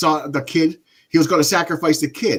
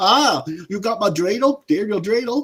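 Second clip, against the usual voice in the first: high, put-on, German-sounding movie accent; 5 semitones higher than usual. Describing a movie character who talked like a German, imitating a German accent. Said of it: "talking like he was German".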